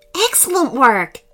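with pride. A companion replies to the lemming fairy's success, proudly. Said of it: "replied Harrison proudly".

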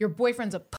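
mild, half-yelled, held in. Retelling a guy at the top of the stairs insulting them: imitating someone yelling. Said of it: "and then he yells".

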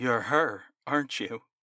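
voice quivering and trembling in terror. John Watkins realizes who the woman opposite him is: voice quivering in terror. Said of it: "His voice quivered in terror".

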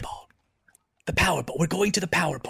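quiet whispering voice. Calling the others to lean in, then revealing the secret plan: whispering in character. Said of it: "So I was going to whisper it!".

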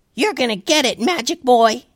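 super cute tiny mouse voice. A troll snaps at the magic boy casting spells, in a super cute tiny mouse voice. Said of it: "it was in a super cute and tiny mouse voice".

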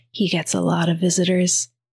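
mock dark, menacing, really sinister nurse voice. Retelling a nurse whose tone suddenly changes: mock-sinister nurse voice. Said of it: "her tone changes from one of a nurse on her break or whatever to like really sinister".

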